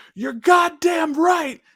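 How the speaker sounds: shrill, very high-pitched, loud yell. Retelling a man yelling from the theater door: imitating someone yelling. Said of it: "he just yells".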